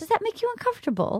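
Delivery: put-on British accent with voice pitched very high. Retelling what Rachel asked the mom: Rachel's British accent. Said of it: "in a British accent".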